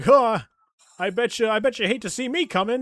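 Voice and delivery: pushy voice, high and loud. Imitating a regular greeting the girls: imitating Eustace. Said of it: "And he's like".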